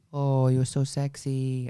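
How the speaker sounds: put-on flirtatious voice. Retelling how the doorman kept hitting on her: imitating a flirty come-on. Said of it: "the doorman kept hitting on me".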